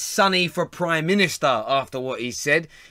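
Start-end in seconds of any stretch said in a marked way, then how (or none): none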